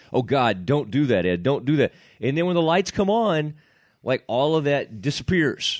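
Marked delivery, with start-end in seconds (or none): 0.1-1.9 put-on nervous mumbling. Imitating the other speaker's nervous self-talk before going live: imitating Ed's nervous self-talk. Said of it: "You'd be like".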